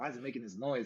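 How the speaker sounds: plain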